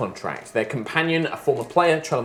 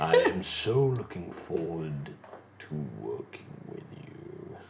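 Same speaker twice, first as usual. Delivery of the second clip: very low, soft, soothing yet terrifying, charming menace; 9 semitones lower, 10 dB quieter than usual. Narrator voicing the voice heard as the power of the Nine Hells floods in, deep, charming, terrifying voice. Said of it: "deep, charming, soothing, but also terrifying voice".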